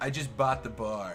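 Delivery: stupid-sounding low voice. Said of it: "that was always my impression for just, like, somebody who sounded stupid".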